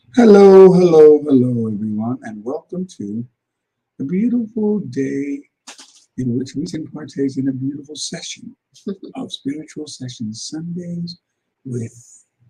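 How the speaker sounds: put-on sing-song spiritual host voice. Opening the session and greeting everyone in a put-on spiritual-session voice. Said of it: "why I'm using this voice, it's because I'm trying to be in the mood of a spiritual session".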